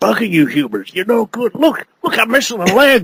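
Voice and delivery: tortured, battered, broken-down little robot voice. Acting out a little Transformer robot who has been tortured: imitating a tortured little robot. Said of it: "he turns up and he's like".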